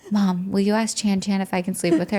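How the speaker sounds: put-on child voice, whispering. Retelling what a daughter asked at night: imitating a child whispering. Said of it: "She whispers to me".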